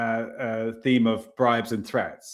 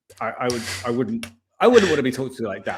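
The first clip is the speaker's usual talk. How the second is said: ordinary talk, nothing marked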